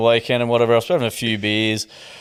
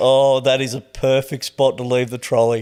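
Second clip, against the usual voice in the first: giggling while speaking. Retelling a reaction to a photo of a left trolley: retelling a giggling remark. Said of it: "I'm just giggling".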